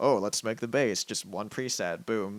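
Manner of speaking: snide, dismissive, sarcastic mocking tone. Recalling what people wrote in the comments: imitating sarcastic commenters. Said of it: "this really like just sarcastic tone of like".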